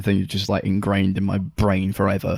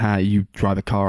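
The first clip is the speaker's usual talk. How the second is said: ordinary talk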